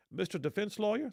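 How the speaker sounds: put-on Southern American accent. The defense lawyer retelling what the judge told him: imitating a Southern accent. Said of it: "you do a good K Ivy slash Southern accent".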